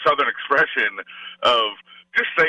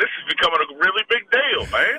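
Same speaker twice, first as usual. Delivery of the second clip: put-on terrible Southern accent, pitched up; 6 semitones higher than usual. Retelling what Foster's father said when called: terrible Southern gentleman impression. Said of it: "that was a terrible impression".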